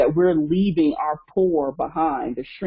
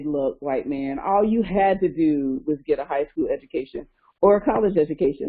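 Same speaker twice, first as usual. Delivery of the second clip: usual speaking voice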